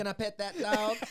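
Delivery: put-on very high, loud little Southern girl's voice. Describing a video, the speaker quotes a little girl in her Southern accent. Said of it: "It's her accent".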